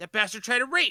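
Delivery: loud, high-pitched, accusing yell. A game master voices Mr. Creep running up to the players: Mr. Creep shouting loudly. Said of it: "loudly go".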